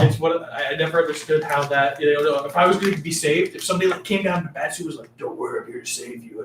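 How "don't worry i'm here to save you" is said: put-on raspy hero voice, much lower. Imagining someone coming down to save you, raspy Batman voice. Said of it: "Did you smoke a pack of Marlboros?".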